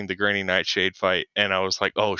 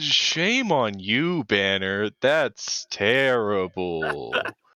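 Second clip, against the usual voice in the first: grand, theatrical, swooping, very dramatic delivery. A game player speaks in character, scolding another character, in a dramatic voice. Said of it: "in a very like uh dramatic voice".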